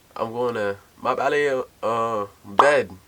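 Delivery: put-on speaking with a Haitian accent. Recalling saying English words for a grandmother, Haitian accent. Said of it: "I used to say English words in a Haitian accent".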